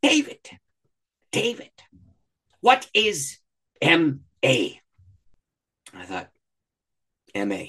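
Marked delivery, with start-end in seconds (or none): 0.0-4.8 heavy put-on Ugandan accent, very slow and drawn out. Act out a speaker who stops mid-story to question you, in a very thick put-on Ugandan accent. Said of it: "with his very thick Ugandan accent".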